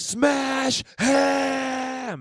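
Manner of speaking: very high, very loud crazed scream, "him" drawn out. Retelling a father's only advice to his kid at a match: imitating a father screaming. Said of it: "screaming louder than anyone can scream".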